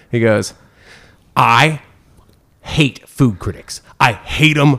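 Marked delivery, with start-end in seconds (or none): 1.3-4.8 put-on angry voice, higher pitch. Retelling what Guy Fieri said on meeting a food critic: imitating an angry Guy Fieri. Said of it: "he's pissed. He is pissed".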